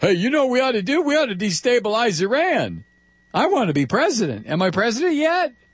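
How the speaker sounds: high, fast, rattled-off mocking impression.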